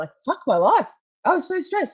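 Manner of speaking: high, tearful voice on the verge of crying. Recalling a stressful search for vapes, the speaker is starting to cry. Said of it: "I'm starting to cry now thinking about it".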